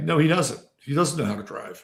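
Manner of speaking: put-on matter-of-fact, unamused, dead straight deadpan. Quoting a woman's answer to his remark, retelling a deadpan reply.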